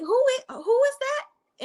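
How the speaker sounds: high, dismissive diva voice. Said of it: "in my [name] voice".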